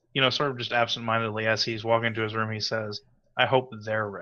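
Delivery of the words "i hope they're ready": whispering with vengeful arrogance. Voicing a player character alone after a conversation: whispering with vengeful arrogance. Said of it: "my character whispers to himself".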